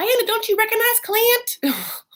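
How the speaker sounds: very high, put-on Southern woman's accent. Retelling what a woman said to her dog, the speaker does a put-on Southern woman voice. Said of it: "everyone's gonna sound like the same Southern person".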